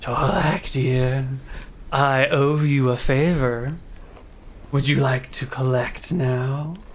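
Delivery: soft, quiet, low-key voice. Game master voicing a voice heard in a character's mind, soft voice. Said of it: "you hear this soft voice saying".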